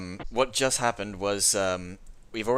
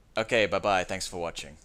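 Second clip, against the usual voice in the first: usual speaking voice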